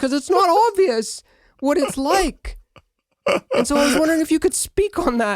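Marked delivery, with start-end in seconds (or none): 0.0-2.6 put-on overly interested voice, pitched higher. Imitating Peterson asking a guest a question, way too interested. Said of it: "talking like this".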